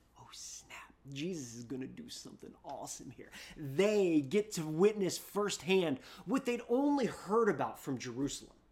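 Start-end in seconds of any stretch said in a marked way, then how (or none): 0.2-3.3 put-on excited, eager voice buzzing with anticipation. Acting out an onlooker in a crowd: imitating excited anticipation. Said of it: "the anticipation in the crowd, the excitement".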